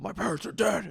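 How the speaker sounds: screaming in a comic-book hero voice. Retelling a friend's viral street bit: Batman voice. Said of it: "And he would do the Batman voice".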